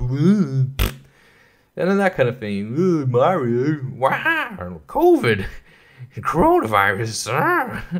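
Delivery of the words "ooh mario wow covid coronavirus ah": very slow, drawn-out, swooping exclamations. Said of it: "does sound like Letty".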